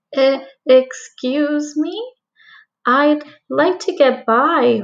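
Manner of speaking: small, slow, meek, timid voice. Reading a story aloud, voicing Ruby asking the wolf to pass: small timid voice. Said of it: "in a smaller voice than she would have liked".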